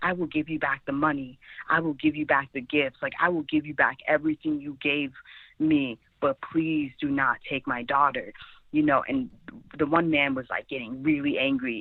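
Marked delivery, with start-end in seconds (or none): 0.0-8.3 put-on pleading, begging voice. Recalling her mom begging two men not to take her: imitating mom begging. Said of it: "my mom holding on to me really tight and just begging".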